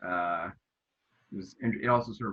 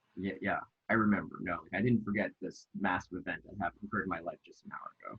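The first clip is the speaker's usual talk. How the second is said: usual speaking voice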